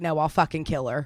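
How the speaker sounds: put-on angry voice. Retelling own reply to a friend's suggestion: retelling own angry words. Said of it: "I was so mad".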